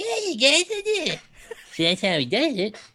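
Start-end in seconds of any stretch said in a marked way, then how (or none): 0.0-1.2 put-on cartoon child voice. Showing how Trey Parker does the Cartman voice: imitating Cartman voice. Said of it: "he talks like this".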